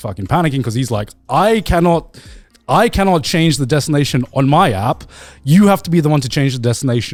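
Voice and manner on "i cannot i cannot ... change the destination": ordinary talk, nothing marked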